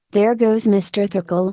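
ordinary delivery

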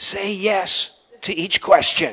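high-pitched, hushed whisper. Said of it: "and he's whispering".

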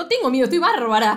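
put-on defiant exclamation. Retelling what a woman said when told not to be afraid, acting out a defiant exclamation. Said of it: "ella está tipo".

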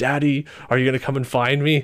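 put-on eerie, sinister, demonic little girl voice. Retelling a game record that plays a little sister: imitating a creepy demonic little sister voice. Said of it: "her creepy demonic voice being like".

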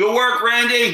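high shouting in character voice. Yelling to a character as elevator doors close: in-character yell. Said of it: "I yell".

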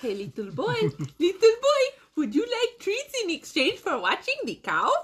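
put-on very high, swooping old German witch voice. Playing a witch luring a little boy with treats, in an old german lady voice. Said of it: "Why are you German?".

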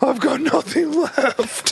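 high, sozzled, boozy cartoon bear voice. Speaker describes the last half hour of a long movie, drunk Pooh Bear voice. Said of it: "You sound like a real, drunk Pooh Bear".

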